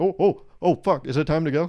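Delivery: loud, giddy, overexcited dog-voice babble. Acting out what a dog thinks when people amp it up: imitating an excited dog. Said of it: "the dog gets all excited".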